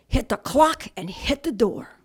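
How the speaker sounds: slow, loud, furious yelling.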